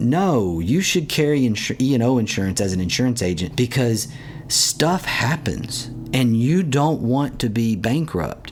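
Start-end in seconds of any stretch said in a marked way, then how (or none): none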